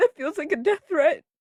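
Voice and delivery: holding back tears, tearful voice with sobbing breaths.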